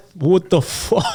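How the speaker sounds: loud, very high, botched New York accent. Asked to do a New York accent, a friend tries: attempted New York accent. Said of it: "Dude, that was Russian".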